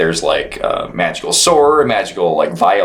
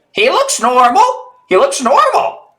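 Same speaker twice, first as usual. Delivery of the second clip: very high, birdlike parrot character voice. Voicing a beak-clicking character inspecting someone: voicing a parrot-like character. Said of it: "He says".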